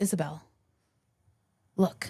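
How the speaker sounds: mock serious, very solemn, grave, ceremonious tone. Retelling what a fellow tour guide said in a dark basement: solemnly imitating Jay. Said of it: "he very solemnly goes".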